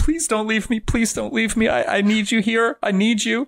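mock very high, tearful, crying voice. Retelling a scene, the speaker acts out imitating Adam crying. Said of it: "Adam is crying like".

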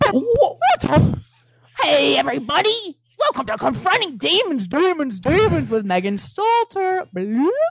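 exaggerated cartoony voice, high and slow. Redoing the podcast intro after being told to be more cartoony: cartoony intro delivery. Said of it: "more cartoony".

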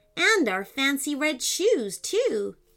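ordinary delivery

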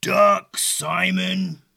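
faraway, creaky, rough dragon growl, one word drawn out. A narrator reads a dragon calling a warning to Simon from its lair, low rumbling growl. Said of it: "a low, rumbling, faraway voice growl".

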